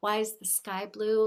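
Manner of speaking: ordinary talk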